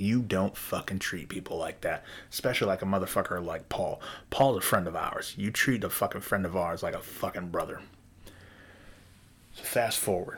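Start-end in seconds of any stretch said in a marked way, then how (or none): none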